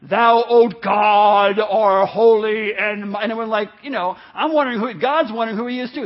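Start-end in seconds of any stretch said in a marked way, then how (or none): 0.1-2.7 booming, very loud, very slow archaic prayer intonation. Retelling a guy at a wednesday prayer meeting, in an old english prayer voice. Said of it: "talking in old English or something".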